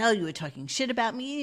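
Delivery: snotty, catty, bitchy schoolgirl attitude. Retelling a girl's accusation before a teenage fight: imitating a bitchy girl. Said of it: "she was all fucking bitchy".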